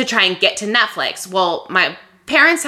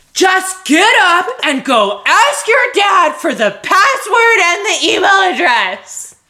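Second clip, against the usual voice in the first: insistent, forceful, slow, raised voice; 9 semitones higher, 4 dB louder than usual. Repeating to the listener what they said to her earlier: retelling a forceful demand. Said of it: "And it was very forceful. And your voice was raised".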